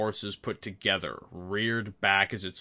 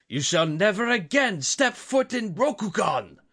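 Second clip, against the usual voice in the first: very high, booming, roaring bellow; 12 semitones higher, 7 dB louder than usual. Reading the daimyo's line as he shouts at the monster, bellowing. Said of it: "the Yogo Daimyo bellowed".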